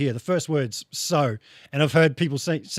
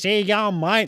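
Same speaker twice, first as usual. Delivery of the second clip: broad bogan Australian accent, vowels pulled way back; 5 semitones higher than usual. Explaining how bogan Aussies talk, the speaker demonstrates a bogan Australian accent. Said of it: "they talk like this".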